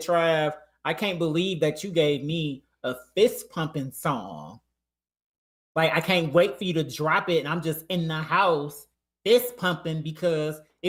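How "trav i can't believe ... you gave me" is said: plain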